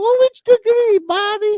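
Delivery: put-on grandmother voice. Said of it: "impersonated Mama Babushka's voice".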